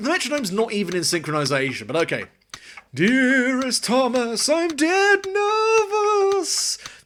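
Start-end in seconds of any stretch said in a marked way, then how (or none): 2.9-6.8 very high, slow, drawn-out spooky ghost voice. Performer reads a letter aloud as a ghost: ghost voice. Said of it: "I've got to do a ghost voice now".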